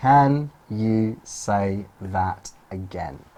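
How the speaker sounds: deliberately slowed-down delivery. Repeating the practice question once more, now saying it more slowly. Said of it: "So more slowly".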